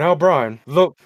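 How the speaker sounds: dad-like cartoon voice. Imitating a late father who sounded like Hank Hill: imitating dad sounding like Hank Hill. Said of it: "are you doing a Hank Hill impersonation".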